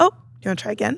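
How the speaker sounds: warm voice, smiling. Retelling a reply to a whining child: retelling own warm, smiling reply. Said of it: "with a smile, with a wink".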